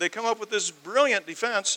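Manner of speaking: high, loud sarcastic "brilliant". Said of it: "I'm using sarcasm here".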